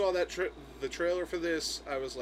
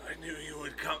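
put-on injured voice, much quieter; 2 semitones higher, 4 dB quieter than usual. Retelling a scene where the injured commissioner speaks in hospital: imitating Commissioner Gordon through oxygen mask. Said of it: "he's got an oxygen mask on".

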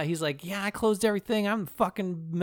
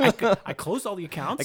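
put-on manic, out-of-his-mind unhinged delivery. Describing a movie character to another speaker, imitating a manic man. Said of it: "He sounds like he's losing his mind because he's like".

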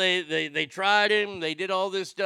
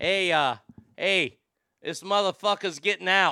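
put-on thick Boston accent. Telling the people of South Boston a prisoner is getting out: Boston accent. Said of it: "to speak with a Boston accent".

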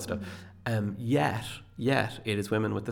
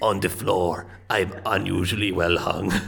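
loud, terrible put-on German accent; 2 semitones lower, 6 dB louder than usual. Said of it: "What a terrible German impression".

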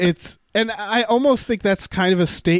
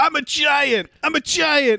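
put-on drunken shout; 8 semitones higher than usual. Recounting a scene where a woman confronts another character: retelling a shout. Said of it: "she shouts like".

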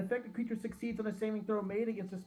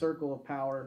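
ordinary talk

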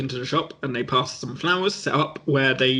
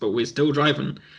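ordinary talk, nothing marked

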